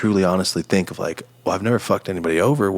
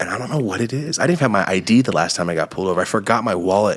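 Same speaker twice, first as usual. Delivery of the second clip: ordinary talk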